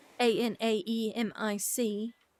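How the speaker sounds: letter-by-letter spelling in a British accent. Spelling the word out loud mid-conversation, in a British accent. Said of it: "Why did I start spelling it in a British accent?".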